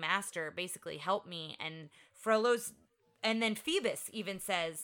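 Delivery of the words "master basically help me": usual speaking voice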